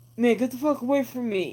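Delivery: mock belligerent, aggressive, hostile tone. Retelling what a masked man said when challenged: imitating an aggressive retort. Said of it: "the guy in the gas mask gets all aggressive".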